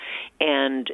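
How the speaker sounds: ordinary delivery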